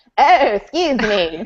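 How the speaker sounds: failed attempt at Scottish accent. Retelling a scene, doing a bad Scottish accent that comes out Katharine Hepburn-like. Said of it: "try to do a Scottish accent".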